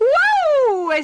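very high, loud, long drawn-out exclaimed wow. Narrator voicing Bastoncello reacting to Nonna Nodo's cooking, exclaiming. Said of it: "Esclamò Bastoncello".

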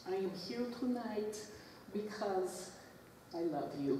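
soft, purring voice.

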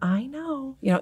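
quiet, hushed, soft and slow. Recalling replying to someone yelling at them: answering softly. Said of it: "answering so softly".

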